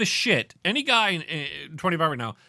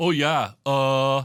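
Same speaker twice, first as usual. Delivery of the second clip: clueless, dopey, dumb idiot voice; 3 dB louder than usual. Retelling a loud moviegoer talking during the film: imitating an idiot's voice. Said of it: "this is this idiot's voice".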